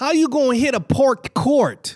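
put-on heavy, laid-on-thick West Coast US accent. Retelling what a dad said to his toddler, in a thick West Coast accent. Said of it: "Like with a real thick West Coast accent".

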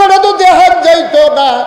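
high, loud voice calling out.

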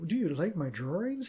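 mocking put-on voice. Retelling how Mike Myers made fun of a drawing host: imitating Mike Myers as Simon. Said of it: "Mike Myers used to make fun of him".

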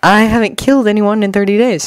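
ordinary delivery

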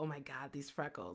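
voice with an audible smile. Voicing someone's thought about their own features, in a smiling voice. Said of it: "I'm saying it with a smile because freckles are so beautiful".

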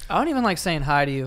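plain

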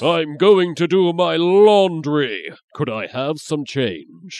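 put-on would-be seductive sexy male voice. Having forgotten what he was supposed to be doing, switching on his sexy man voice. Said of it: "I'll just activate my sexy man voice".

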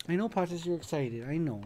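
put-on high-pitched baby-talk voice. Streamer stops to talk to Potus, in a baby voice. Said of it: "It's a baby voice".

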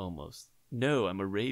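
put-on flat robotic voice. Joking about a scene where Bran gets kissed on the forehead: flat emotionless Bran voice. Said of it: "you said that with too much emotion".

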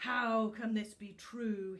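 snarled words. A fire dragon reacts to the book's prophecy, snarling. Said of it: "he snarled".

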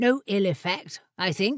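ordinary delivery

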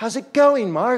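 put-on very high, loud, bright, cheery Australian accent. Retelling a business contact's phone greeting, imitating Jeff's cheery Aussie voice. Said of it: "in his cheery Aussie voice says".

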